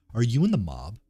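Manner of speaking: ordinary delivery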